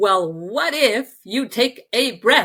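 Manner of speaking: firm, bossy, loud commanding tone. Speaker retelling what she said to them, as a retold loud command. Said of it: "in a loud voice, she said, she kind of commanded me".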